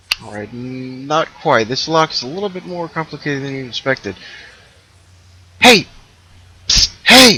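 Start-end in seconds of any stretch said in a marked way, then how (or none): 5.6-7.4 loud, pitched-up calling out. Voicing an unseen prisoner calling to a player character: calling out to get attention. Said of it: "A voice rings out from behind you".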